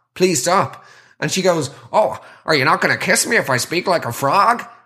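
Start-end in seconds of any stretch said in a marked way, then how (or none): 2.0-4.6 put-on half-American teen accent. Retelling what an annoying girl said when asked to stop, in a half-American accent. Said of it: "She had that sort of half-American accent".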